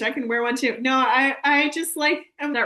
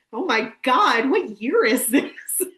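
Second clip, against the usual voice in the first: stunned, aghast, disbelieving delivery. Quoting a line from a video: imitating Thomas's line read. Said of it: "that particular line read".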